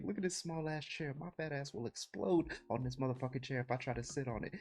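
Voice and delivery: high, hushed, intense whisper-yelling. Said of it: "He's, like, whisper yelling".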